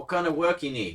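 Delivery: high-pitched voice, called out. Narrating a scene, voicing a character who yells back without moving: yelling. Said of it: "he yells back".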